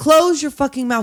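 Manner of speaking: play-acted all-out, high, loud screaming. Acting out a line from a movie scene being recapped: screaming. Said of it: "Why are you screaming?".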